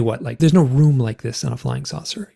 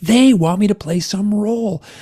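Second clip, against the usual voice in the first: acted scream, higher; 7 semitones higher than usual. Recounting what they said on a recording, retelling own screaming. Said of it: "And I'm screaming like".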